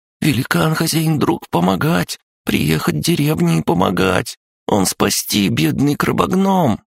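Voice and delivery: very high, ringing, scared, frightened voice. A nightmare creature argues with itself, switching to a ringing, higher, frightened voice. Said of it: "Становился звонче, выше, испуганнее".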